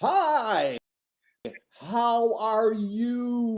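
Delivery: high-pitched, slow, condescending talking-down tone. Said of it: "people that start talking slow to you".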